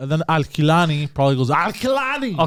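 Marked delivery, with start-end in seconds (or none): 1.5-2.4 very high-pitched put-on voice. Guessing how Al Kilani says his own name, the speaker does a Schwarzenegger-like impression. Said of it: "sounded like you're trying to do an imitation of Schwarzenegger".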